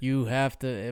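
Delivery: flat, nearly monotone delivery. Imitating a voice actor's Batman delivery: almost monotone Kevin Conroy Batman. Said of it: "Almost monotone".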